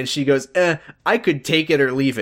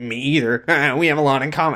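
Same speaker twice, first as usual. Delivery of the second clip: put-on lusty male voice. Retelling a scene where a man answers Nora, in a mock-horny Ben voice. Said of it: "I don't know why I'm doing horny Ben voice".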